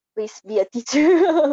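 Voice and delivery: playful begging. Reading out the question about teaching, mock pleading. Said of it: "It's like I'm pleading".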